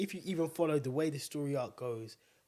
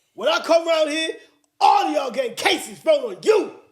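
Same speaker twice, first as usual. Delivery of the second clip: put-on menacing movie-villain voice, higher and louder; 14 semitones higher, 17 dB louder than usual. Acting out a film quote for a guessing game: Denzel Washington impression. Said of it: "it was actually like Denzel was here with us".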